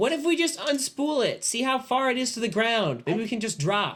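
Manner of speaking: mock high yell. Playing a character calling down out of a window: yelling down from a window. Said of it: "yell down out of the window and goes".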